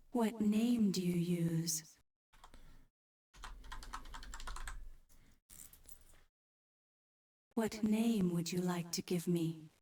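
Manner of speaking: unnecessarily seductive, sultry, sexy computer voice. In a game, the AI asks what name to use: unnecessarily sexy AI voice. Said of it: "unnecessarily sexy A I voice".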